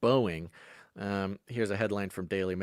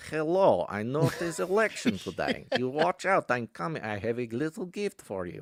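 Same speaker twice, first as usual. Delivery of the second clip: put-on Russian voice, pitched a bit high; 7 semitones higher than usual. Imagining a phone call about the election, in a Putin voice. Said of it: "it was like a Putin voice".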